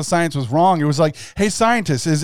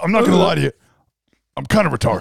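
mock ranting commentator voice. Continuing the Alex Jones impression after being praised for it. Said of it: "That was good".

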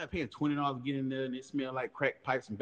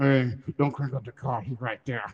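ventriloquist-style side-of-mouth talking, louder; 5 dB louder than usual. Retelling a hushed warning to a friend in a car: talking out of the side of the mouth. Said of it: "talking with my mouth to the side".

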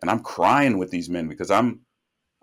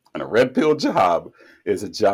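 voice cracking and breaking mid-phrase. Explaining a term from past jobs, voice cracking mid-sentence. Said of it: "I don't know why my voice cracked right then".

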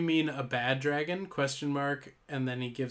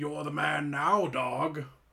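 aggressive, forceful put-on voice, pushed hard. Taking a turn after the other speaker's attempt at the same line: aggressive Sean Connery impression. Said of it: "You just sound aggressive".

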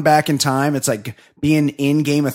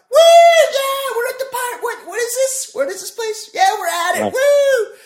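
mock very high, pumped-up girly excited whoops. Retelling how the girls walked in: imitating screaming excited girls. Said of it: "They're just screaming".

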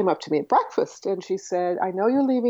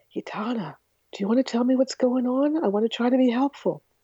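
hushed whispering; 4 semitones higher than usual. Retelling how they whispered a question after getting no response, whispered. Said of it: "So I whispered".

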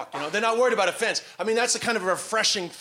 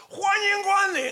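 very high, full-volume acted-out shout; 13 semitones higher than usual. Showing how you shout at customers all day, shouting as loud as possible. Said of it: "you shout at customers as loud as possible".

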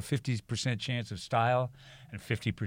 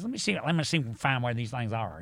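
put-on very heavy twangy voice. Retelling what a guy said going around the back of the house, imitating his very twangy voice. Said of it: "the twangiest voice I'd ever seen".

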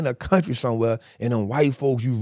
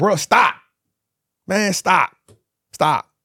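put-on high, tearful, crying pleading tone; 5 semitones higher, 5 dB louder than usual. Retelling being sprayed until unable to breathe: retelling crying while pleading. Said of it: "I'm crying, like".

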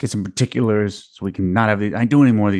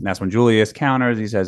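ordinary talk

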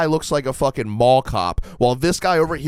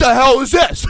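acted betrayed voice, higher and louder; 12 semitones higher, 7 dB louder than usual. Retelling how a cop reacted to a hidden gun: imitating a betrayed cop. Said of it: "he felt betrayed".

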